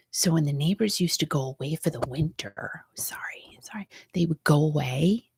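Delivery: hushed whisper. Telling a story she doesn't want him to hear: whispering. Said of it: "Why am I whispering?".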